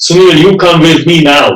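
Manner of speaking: put-on very heavy Hungarian accent. Speaker retells a woman at his door telling him to come, heavy Hungarian accent. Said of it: "in her very heavy Hungarian accent".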